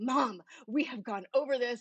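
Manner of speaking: exasperated.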